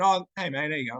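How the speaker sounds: ordinary talk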